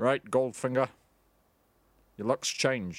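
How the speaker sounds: low put-on impression voice with a subtle lisp. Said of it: "a much more subtle lisp".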